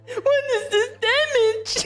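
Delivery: very high, aggrieved, hurt put-on voice. Repeating the line in a voice you say you can't do, in a put-on hurt voice. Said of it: "it sounded even more hurt".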